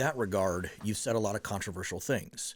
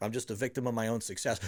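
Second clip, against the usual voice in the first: mock very smug, self-satisfied tone. Imitating the other speaker's past remark: imitating someone smugly. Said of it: "I'm saying it very smugly right now".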